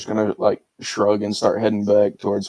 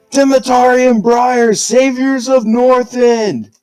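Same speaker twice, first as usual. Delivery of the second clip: shrill, booming scream, very high, very loud; 8 dB louder than usual. Acting out a character hyping up a crowd, screaming in character. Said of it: "arms in the air, screaming".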